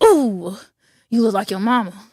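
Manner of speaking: put-on angry tone. Retelling to mom what dad used to say: imitating dad saying it angrily. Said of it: "Why you so angry about it?".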